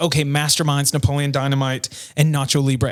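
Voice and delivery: ordinary talk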